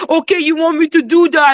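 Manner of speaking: put-on babyish, petulant, derisive sulky-child voice. Arguing with another speaker and mimicking their reply: mocking childish imitation. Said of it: "As if you're a child".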